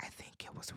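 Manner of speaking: put-on quiet flat voice. Retelling a reality show scene, quoting a partner: imitating a soft monotone. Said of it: "very softly and very monotonely".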